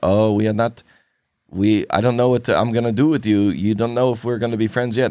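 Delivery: horrible put-on Russian accent.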